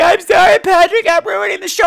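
mock weepy, high-pitched, teary crying voice. Retelling how a guest apologized during the show: imitating Homer crying. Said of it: "he'd be crying".

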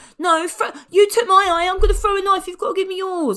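thin, reedy, very high little squeaky voice. Mocking how a man who oozes malevolence sounds when he speaks: reedy little voice. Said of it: "reedy yeah. little voice".

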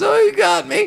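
put-on mumble. Quoting a favorite Home Alone line, retelling a mumble. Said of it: "he mumbles".

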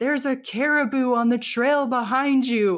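play-acted, urgent, high, loud shout. Retelling how people on a ridge warned hikers: imitating people screaming. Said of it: "these people up on the ridge are screaming".

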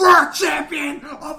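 slow, high, laughing wrestling-promo scream.

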